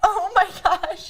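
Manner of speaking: high, slow, horrified freaked-out gasp. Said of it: "We started freaking out".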